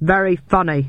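ordinary talk

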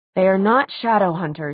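ordinary delivery

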